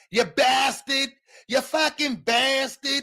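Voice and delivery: put-on Boston accent with very high voice. Mocking how people from Boston talk: mock Boston accent. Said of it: "the worst Northeast accent".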